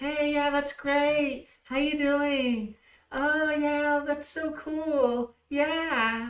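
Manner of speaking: very high, slow mocking tone with cool drawn out. A speaker complains about how people in their neighborhood talk, mocking how locals talk. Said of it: "They all sound like that, and it's annoying as hell".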